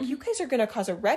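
fed-up, angry telling-off voice. Retelling how she got mad at the young drivers: imitating someone getting mad. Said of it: "getting mad at them and being like".

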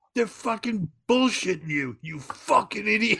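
mock, very high, shrill screaming. Retelling a story where one person screams at another: imitating Mullins screaming. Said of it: "He just starts screaming at him".

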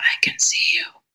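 really whispery, hushed, soft, breathy whisper. Retelling a voice heard in a dark room: really whispery voice. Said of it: "really whispery".

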